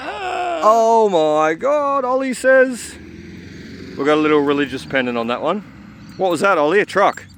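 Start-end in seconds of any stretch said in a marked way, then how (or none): 0.0-2.0 very high, swooping, thrilled, excited scream.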